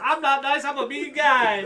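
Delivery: high, slow, sweet-sounding voice. Answering in a wrestler's voice after being asked why he sounds nice: Bobby Lashley impression. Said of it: "why do you sound so nice".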